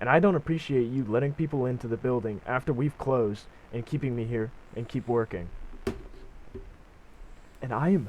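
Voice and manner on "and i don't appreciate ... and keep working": plain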